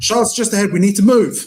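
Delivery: shouting in a character voice. Voicing Milo in the middle of a game scene: Milo shouting. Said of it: "where Milo shouts".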